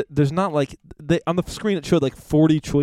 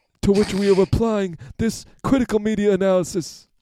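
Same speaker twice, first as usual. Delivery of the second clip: put-on, pitched-up, highbrow New York art critic voice; 6 semitones higher than usual. Discussing a movie, playing a New York art critic. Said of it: "trying to be, like, a New York art critic".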